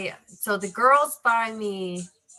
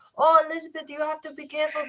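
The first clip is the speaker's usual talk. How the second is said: put-on pitched-up Portuguese accent; 7 semitones higher than usual. Retelling what a portuguese man fixing something told her, in a portuguese accent. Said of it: "like the whole Portuguese accent".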